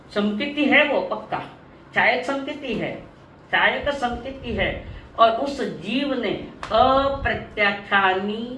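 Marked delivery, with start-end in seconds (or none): 5.2-8.5 slow, deliberate, word-by-word delivery. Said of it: "मैं धीरे धीरे बोल रही हूँ".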